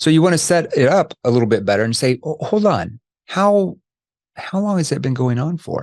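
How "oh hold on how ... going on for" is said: curious, inquisitive, interested tone with lightly raised pitch. Demonstrating how to ask a follow-up question about a problem, curious tone. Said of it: "that tone I just used there is more of a curious tone".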